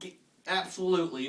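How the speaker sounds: ordinary talk, nothing marked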